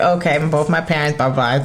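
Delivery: ordinary talk, nothing marked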